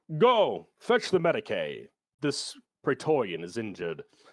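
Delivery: lofty, refined, cadenced, commanding voice of authority. Describing a refined character who mixes in latin, quoting him: mock-commanding refined voice. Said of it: "he's very refined, and he talks with a lot of cadence and authority".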